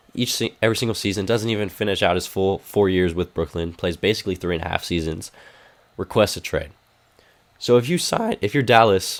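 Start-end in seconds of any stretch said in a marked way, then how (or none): 7.5-8.3 voice breaking mid-sentence, cracking up high. Mid-argument about what a team should do, voice cracking. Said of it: "voice crack".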